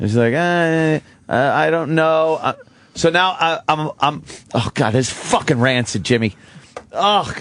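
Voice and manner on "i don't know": put-on, slow, stammering, tearful little girl voice. Retelling how a lost girl answered while crying: imitating a crying girl. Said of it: "she comes by and she's crying".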